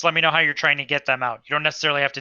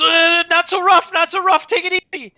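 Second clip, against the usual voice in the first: very high, loud shout; 6 dB louder than usual. Voicing a character hit by falling building: yelling in character. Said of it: "and he yells".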